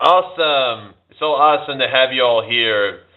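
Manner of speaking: put-on American accent, high and slow. Asked whether they can do one, speaker shows a put-on american accent. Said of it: "That's my American accent".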